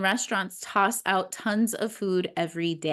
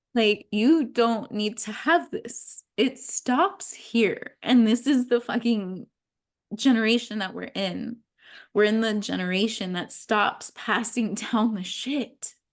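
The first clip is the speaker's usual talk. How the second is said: choked-up voice on the verge of crying; 2 semitones higher than usual. A speaker who just said they're about to cry keeps going, choked up, near tears. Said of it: "Oh, I'm gonna cry".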